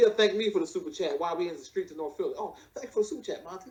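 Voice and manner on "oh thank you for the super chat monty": acted-out jittery, breathy, hushed, nervous whisper. Imitating Lennon thanking for a super chat: imitating Lennon being nervous.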